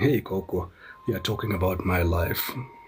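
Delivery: ordinary talk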